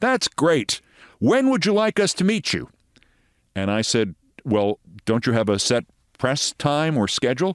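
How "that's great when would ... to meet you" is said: put-on thick, heavy European accent. Retelling arranging a CNN marathon preview, quote the man in a thick European accent. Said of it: "he said in a rather thick European accent".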